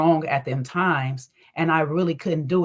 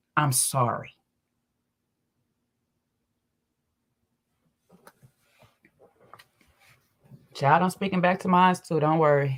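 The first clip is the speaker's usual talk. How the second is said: speaking while holding back tears. Mother apologizing to her child, holding back tears. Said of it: "I'm trying not to cry right now".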